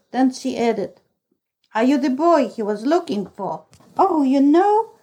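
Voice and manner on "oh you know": high, eager, excited cry. The narrator answers a woman's question and asks after someone, crying out excitedly. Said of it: "I cried excitedly".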